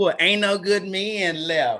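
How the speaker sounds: slow, dragged-out, drawn-out grumbling complaint. Retelling what some women say about men: imitating women complaining. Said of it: "Say it one more time".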